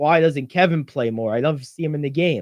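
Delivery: plain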